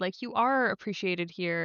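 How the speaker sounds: plain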